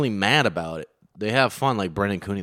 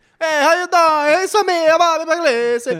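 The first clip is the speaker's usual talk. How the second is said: cartoon Italian accent, higher; 7 dB louder than usual. Joking about pasta and Italians in a chat, Mario voice. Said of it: "That's Mario".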